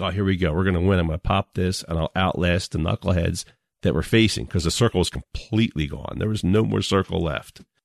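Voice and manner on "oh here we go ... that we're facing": normal talking voice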